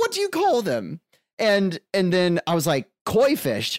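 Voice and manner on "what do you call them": very high-pitched put-on English accent. Retelling the moment a toddler suddenly sounded English; put-on English accent. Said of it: "I'm putting on the English accent".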